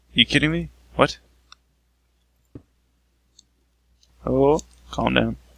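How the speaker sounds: panicking voice. Building a temporary staircase in a game with no way up: panicking. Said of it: "I'm panicking".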